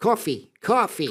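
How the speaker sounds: put-on New York accent on coffee. Warming up after being told to try the accent: put-on New York accent. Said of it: "go New York".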